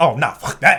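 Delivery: normal talking voice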